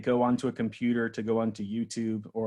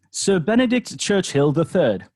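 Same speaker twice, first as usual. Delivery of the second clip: very loud, high-pitched, put-on British accent; 8 semitones higher, 9 dB louder than usual. Giving a made-up name when asked, in a put-on british accent. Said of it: "I'll practice my British accent".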